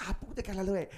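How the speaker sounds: very high-pitched yelling in Spanish. Playing a woman beating someone with her shoe in a scene: yelling in Spanish. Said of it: "she's like yelling in Spanish at you".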